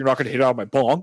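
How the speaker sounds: play-acted, ticked-off, irritated, pissed-off anger. Retelling how a guy warned him off his bong: mock pissed-off voice. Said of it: "in a really pissed off voice".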